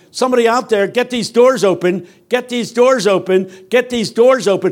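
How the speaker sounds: high yelling repeated over and over. Telling how they banged on stuck elevator doors, re-enacting their own yelling. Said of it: "I'm yelling".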